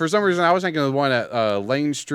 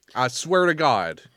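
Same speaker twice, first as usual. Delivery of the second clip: normal talking voice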